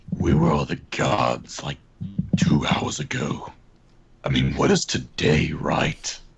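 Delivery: slow, whispered delivery. Playing a character who glances at the group: whispering in character.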